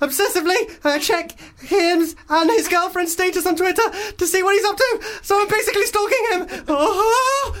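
very high, breathless, terrified panic. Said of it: "she's been chased through the woods".

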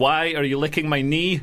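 ordinary delivery

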